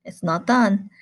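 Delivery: ordinary delivery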